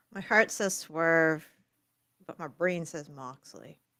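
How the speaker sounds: glum, reluctant, unhappy, displeased tone. Answering a question about who will win the match, sounding unhappy. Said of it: "You don't sound happy about this".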